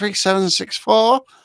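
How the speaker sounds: refined, posh manner of speaking. Imitating how their mum answered the phone, in a posh phone voice. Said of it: "she always spoke very posh".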